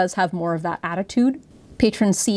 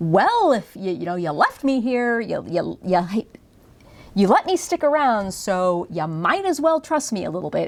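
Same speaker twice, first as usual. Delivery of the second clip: mocking, sarcastic, swooping sing-song tone. Acting out a character's line to show its tone: acting sarcastic. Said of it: "she really is being kinda sarcastic and like".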